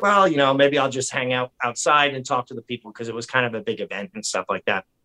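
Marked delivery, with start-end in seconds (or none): none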